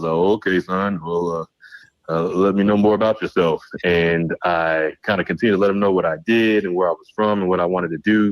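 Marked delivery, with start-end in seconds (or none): 0.1-3.6 very calm, composed, settled, easy tone. Retelling a first meeting, quoting Charlie Neal: imitating Charlie Neal's calm booming voice. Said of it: "in a very, very calm way".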